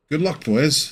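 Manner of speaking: forced out past clenched teeth. The captain wishing the boys good luck before walking away, through gritted teeth. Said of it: "he says through gritted teeth".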